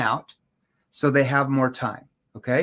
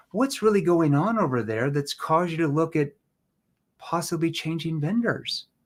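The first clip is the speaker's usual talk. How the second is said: gently worried, caring tone. Demonstrating how to ask a prospect a question, concerned, caring tone. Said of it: "Like, I'm concerned".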